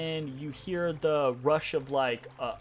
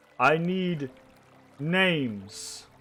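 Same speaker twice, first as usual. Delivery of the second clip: halting non-native Common mixed with Undercommon, louder; 5 dB louder than usual. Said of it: "It's Undercommon Common".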